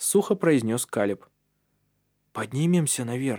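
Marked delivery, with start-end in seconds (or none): 2.3-3.4 hushed whispering. After a dull thud is heard, Andreas whispers to the others. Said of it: "прошептал Андреас".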